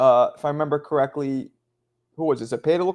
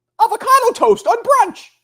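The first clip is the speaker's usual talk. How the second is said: loud, very high-pitched shouted outburst; 6 dB louder than usual. Suggesting what to yell instead, the speaker demonstrates: mock yelling.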